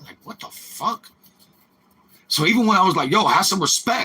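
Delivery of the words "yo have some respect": gutsy, spirited, feisty tone with moxie. Retelling a confrontation with an old guy: retelling own line with moxie. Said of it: "I said it with a little bit of fucking moxie".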